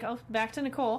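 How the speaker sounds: ordinary delivery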